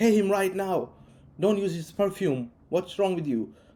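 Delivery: angry, aggressive voice. Retelling how a man screamed at him over paying, imitating an aggressive man. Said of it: "this guy just gets aggressive".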